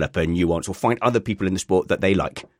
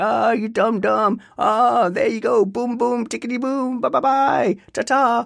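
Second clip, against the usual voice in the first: mock talking straight through full laughter, high. Retelling how the dutch commentator reacted when a driver went off: imitating a laughing commentator. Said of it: "fully laughing".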